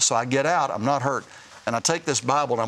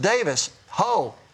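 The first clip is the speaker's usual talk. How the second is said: mock short call, hollered loudly, pitched up; 6 semitones higher than usual. Retelling how the guard hollered at him in the field: imitating a guard hollering. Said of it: "he hollers".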